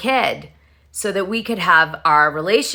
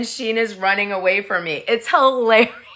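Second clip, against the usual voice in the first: ordinary talk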